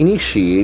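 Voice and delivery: initiate with stress on second syllable ni. Vocabulary lesson, saying initiate with stress on the second syllable, ni. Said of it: "the accent for the second syllable".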